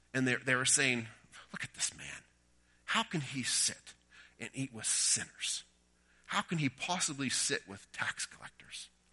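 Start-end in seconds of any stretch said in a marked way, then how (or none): 1.6-8.9 whispered, hushed mutter dripping with disdain. Retelling the religious leaders muttering about Jesus, in mock-disdainful muttering. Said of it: "hear their words dripping with disdain".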